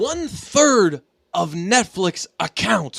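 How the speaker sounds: slow, deliberate, measured, every word drawn out. Reading out a Netflix viewing fact, saying it like Ray Lewis. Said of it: "why am I saying it like Ray Lewis?".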